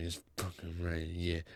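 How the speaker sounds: low, very quiet muttering mumble. Retelling words said to oneself while drawing: imitating own mumbling under breath. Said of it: "I was mumbling under my breath".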